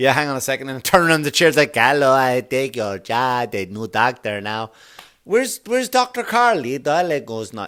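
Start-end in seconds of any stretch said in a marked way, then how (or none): 1.7-7.7 terrible put-on Jamaican accent, slow. In a comic doctor sketch, the new doctor greets a patient in a terrible jamaican accent. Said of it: "That's a terrible um, Jamaican accent".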